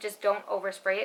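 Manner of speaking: plain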